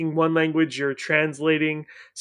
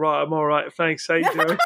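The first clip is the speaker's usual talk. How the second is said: put-on British accent. Retelling answering someone who has a British accent, mimicking a British accent. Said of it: "someone with a British accent".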